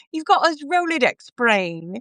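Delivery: clumsy, bad put-on British accent. Retelling a British colleague's compliment: bad British accent. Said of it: "It's my bad British accent".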